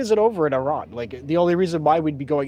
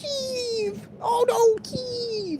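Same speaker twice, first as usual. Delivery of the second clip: very high, slow, shrill, drawn-out mocking tone; 3 dB quieter than usual. Speaker mocks the women who cared about Ukraine: mocking high shrill voice. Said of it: "with a high shrill voice".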